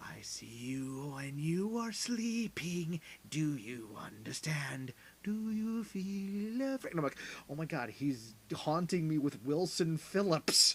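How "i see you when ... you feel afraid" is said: put-on ominous whisper, higher pitch, slower. Recounting a man circling the speaker among cloth sheets; imitating an ominous whisper. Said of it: "he's whispering in this ominous voice".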